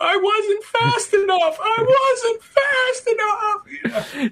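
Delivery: put-on very high, slow, drawn-out sobbing voice. Recapping a movie scene where Sonic holds Tails's body, Sonic crying impression.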